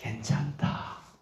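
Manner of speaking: soft, slow, reassuring voice.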